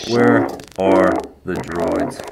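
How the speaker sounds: creepy, very deep, dropped-low voice. One friend plays Kylo Ren for another, in a creepy Kylo Ren voice. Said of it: "You sound like a kidnapper".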